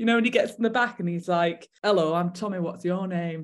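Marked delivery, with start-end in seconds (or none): 1.8-3.4 put-on charming, calm voice. Imitating Tommy Lee Royce greeting someone from the back seat: calm charming Tommy Lee Royce voice. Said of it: "calm, almost charm offensive".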